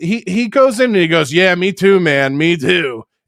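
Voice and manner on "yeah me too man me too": lazy, slow, stretched, drawn-out drawl. Retelling how someone replied to him on X, imitating Mersh's voice. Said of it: "in his Mersh voice".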